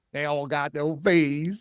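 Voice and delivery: put-on South Philadelphia accent. Mocking financial advisors, the speaker quotes them in a South Philly accent. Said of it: "That's the southern accent".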